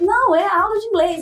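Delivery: delighted tone.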